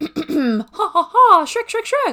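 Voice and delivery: very high, squeaky voice, swooping in pitch. Warming up before doing favorite Shrek impressions, warming up Gingy impression. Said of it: "Give me one second to warm up".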